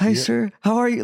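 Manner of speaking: very high, uncomfortable, awkward little voice. Retelling meeting Kobe in his room: imitating own awkward greeting. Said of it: "got so awkward, so uncomfortable".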